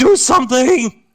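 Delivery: piercing, very high, loud shriek. A narrator voices a character being carried away from her friend: screaming. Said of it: "And she starts screaming".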